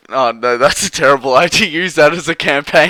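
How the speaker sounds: speaking through laughter. Sharing an opinion about a woman hit by a train, laughing while talking. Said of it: "I'm sorry to be laughing about it".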